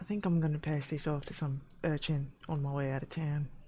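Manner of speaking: hushed, half-whispered aside. In a tabletop game, the game master voices one character half-whispering to another: half-whispering. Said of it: "the sort of whisper to Cecil from Lorkin".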